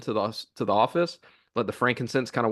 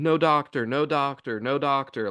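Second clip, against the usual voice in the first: small, contained, put-on child's wailing scream; 3 semitones higher than usual. Telling about a kid's first day in a building with a pediatrician: imitating a child screaming. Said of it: "like screaming".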